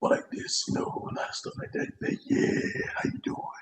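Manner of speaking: put-on deep jazz musician voice.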